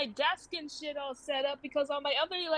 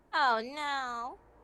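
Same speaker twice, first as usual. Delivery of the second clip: nasal, sarcastic-sounding voice; 3 semitones lower than usual. Reading a scripted line in a recording session: nasal, sarcastic-sounding. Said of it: "really nasally and sounded like you were fucking being sarcastic".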